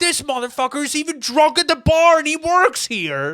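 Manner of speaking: furious scream, very high, very loud. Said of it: "screaming at you".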